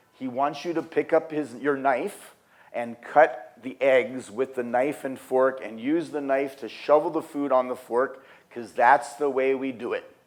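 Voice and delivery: ordinary talk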